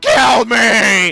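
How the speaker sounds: loud, high, pleading, agonized scream. Game master voicing a foe with a sword in his chest: screaming for death. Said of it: "He is screaming for death".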